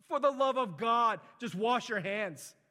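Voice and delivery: very loud, high, exasperated scream. Retelling a doctor at a conference screaming: imitating someone screaming. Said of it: "he begins to scream at all of his doctors".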